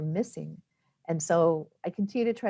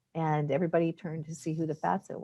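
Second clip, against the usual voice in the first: normal talking voice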